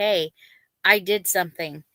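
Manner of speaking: normal talking voice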